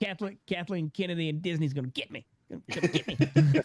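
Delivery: cartoon character voice, pitched high. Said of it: "you gotta say it like Cartman".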